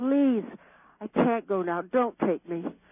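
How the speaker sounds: pleading tone. Recalling praying not to die while thinking of their son, retelling own begging. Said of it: "I kept begging".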